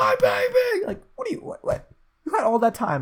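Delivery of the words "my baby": mock piercing scream, very high-pitched and shrill. Retelling a movie scene where she finally gets up: imitating a scream. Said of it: "she gets up and screams".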